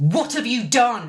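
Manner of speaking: acted steely, angry tone. Telling of a fall, the speaker quotes his angry question, imitating a steely tone. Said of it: "It was so steely".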